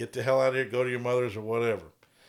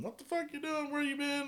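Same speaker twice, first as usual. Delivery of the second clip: frantic, very high-pitched, rapid panicked delivery; 8 dB quieter than usual. Retelling a movie scene, imitating a panicking wife. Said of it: "where his wife is panicking".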